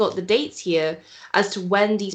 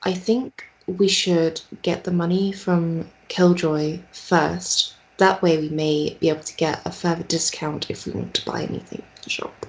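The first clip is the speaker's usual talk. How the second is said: whispered, hushed scheming tone. Speaking to Jack, in a hushed whisper. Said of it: "I say to Jack in like a hushed, whispered tone".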